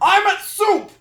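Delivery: shrill, very high, loud put-on voice. Joking about soup in the book, doing Malum voice. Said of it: "canon voice for Malum".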